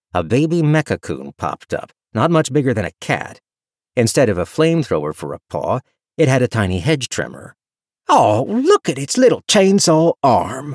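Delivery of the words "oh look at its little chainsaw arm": doting, high-pitched, gooey gushing. A man spotting a tiny robot creature: gushing. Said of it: "Joe gushed, eyes going big and gooey".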